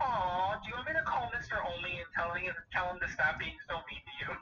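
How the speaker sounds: dripping sarcasm with mock, fake-sorry sympathy. Retelling a father's phone reply to a complaint about playing time: imitating dad's sarcastic tone. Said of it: "you could feel the sarcasm through the phone".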